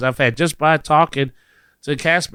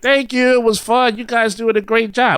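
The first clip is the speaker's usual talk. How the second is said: bright, friendly, cheerful shout, pitched up; 8 semitones higher than usual. Recalling a group outing, the speaker re-enacts yelling out to a cast member: retelling a yell. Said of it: "And I just yelled out like".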